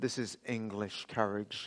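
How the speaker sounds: put-on hushed, whispered, smooth American accent. Retelling a film scene as the sword is lifted: Kevin Costner's smooth American accent. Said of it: "in his smooth American accent as Kevin Costner".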